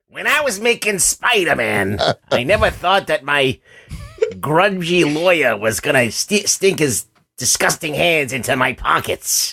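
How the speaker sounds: put-on old man voice. Answering what Stan Lee would say: Stan Lee impression. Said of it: "your Stan Lee impression".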